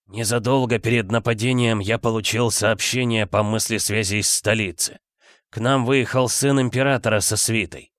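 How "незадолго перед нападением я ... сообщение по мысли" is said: usual speaking voice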